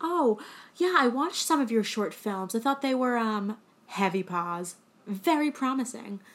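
snarky, uppity, snooty put-on British accent. Retelling a character's backhanded compliment: imitating a snarky uppity british man. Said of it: "very snarky, very, like, uppity British man".

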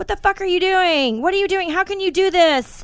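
play-acted yelling, very high-pitched. After a goal, retelling what the woman nearby yelled: imitating a woman yelling. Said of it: "this woman next to me is yelling".

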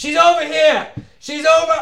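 very high-pitched scream. Voicing an enemy grappling a player and calling others over: screaming. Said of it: "And then he starts screaming".

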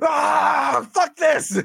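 very high, raw, rough angry scream. Acting out a man screaming while typing replies on his phone; imitating him screaming. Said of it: "is just him screaming while typing".

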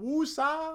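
very high, calming, breathed-out woosah.

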